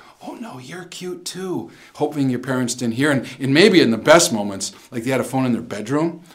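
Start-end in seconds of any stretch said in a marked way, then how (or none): 0.2-1.7 very quiet, hushed, slow half-whisper. Retelling talking to a girl on the phone, hoping parents didn't hear, sort of whispering. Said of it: "sort of whisper".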